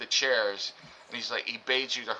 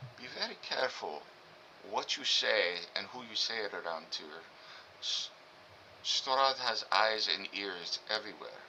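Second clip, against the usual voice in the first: quiet, soft, hushed half-whisper; 2 semitones lower, 8 dB quieter than usual. A game master's character leans in to warn the players: half-whispering. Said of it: "he leans in and uh, whispers".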